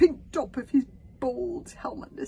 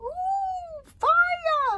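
very high, excited squeak with the "ooh" stretched; 6 dB louder than usual. Narrating the story, the little dragon calls out: squeaky excited Toothless voice. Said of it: "squeaked Toothless in excitement".

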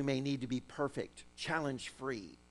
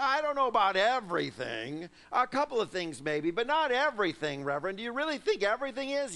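put-on loud, swooping, skeptical, doubtful voice; 7 semitones higher, 6 dB louder than usual. Voicing the doubt that questions a mantra, addressing the reverend: put-on doubtful voice. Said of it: "a little doubt in the background that says".

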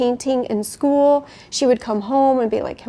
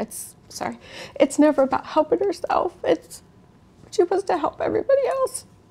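choked up with emotion, higher pitch; 6 semitones higher than usual. Talking about a girl's project to help others, speak choked up. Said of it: "*CHOKED UP*".

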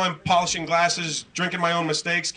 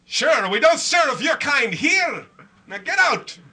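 awful put-on Irish brogue, pitched up; 9 semitones higher than usual. Bartender refusing to serve a customer, in a bad Irish accent. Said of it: "Is that the worst Irish accent you ever heard?".

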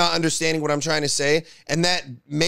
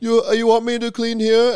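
mocking, put-on impaired-sounding speech, much higher pitch; 6 semitones higher, 4 dB louder than usual.

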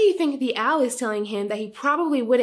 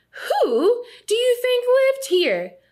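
shrill, loud, very high owl-like hooting; 13 semitones higher, 4 dB louder than usual. The great horned owl answers Earl, who wandered into its hole, hooted loudly. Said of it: "Hooted the great horned owl loudly".

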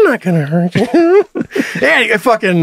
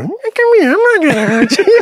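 mock creepy parrot voice, higher pitch; 8 semitones higher than usual. Imitating the parrot in the middle of the night: imitating a creepy parrot. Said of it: "That's so creepy".

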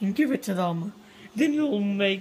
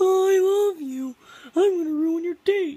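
put-on puppet voice, much higher; 9 semitones higher than usual. The speaker puts on a puppet to disrupt someone's date, using a puppet voice. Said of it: "is this a good impression?".

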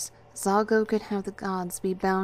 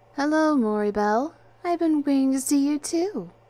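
raised, high, mock-flirtatious tone; 7 semitones higher, 5 dB louder than usual. The narrator answers a voice speaking from behind them, mock-flirtatious. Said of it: "I said in a mock flirtatious tone".

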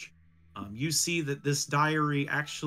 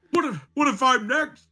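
panicked, frantic, much higher and louder; 10 semitones higher, 9 dB louder than usual. A pig, being told to calm down, asks this, panicked. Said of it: "Get a hold of yourself".

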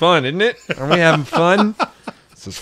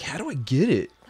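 normal talking voice

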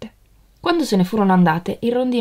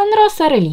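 very high, bright, loud exclaimed cry; 10 semitones higher, 5 dB louder than usual. Narrator reads a character's line on spotting the statue, exclaiming. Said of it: "esclamò".

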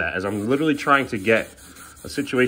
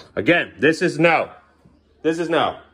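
loud, raised yelling voice; 5 semitones higher than usual. Talking about the cat's mess on the carpet, the speaker is yelling. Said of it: "I apologize for yelling".

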